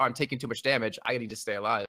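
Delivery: normal talking voice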